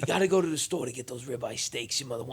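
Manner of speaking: put-on Italian parent voice. Retelling a parent interrupting the writing, imitating an Italian parent. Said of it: "accurate description of an Italian parent".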